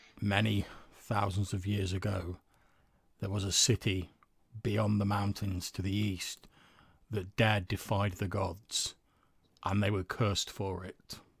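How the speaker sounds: deep, rumbling, echoing ancient-sounding voice. A burning skull turns toward the player and speaks: deep rumbling voice. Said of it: "this deep rumbling voice echoes from it".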